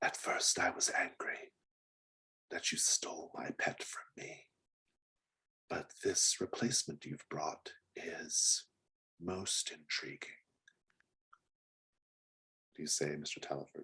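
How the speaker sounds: shadowy, hushed, whispery voice. Narrator voicing Mister Bell in the shadows, addressing another character: whispery, shadowy voice. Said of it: "a much more like whispery, shadowy voice".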